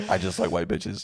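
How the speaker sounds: ordinary delivery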